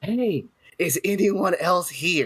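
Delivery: stage whisper meant to carry. In character, about to go into a room, calling out to others: loud whisper. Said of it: "whisper loudly".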